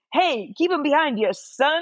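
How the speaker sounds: high fake Scottish accent. Retelling someone quoting a race engineer, in a put-on Scottish engineer accent. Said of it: "engineer sounds pretty Scottish".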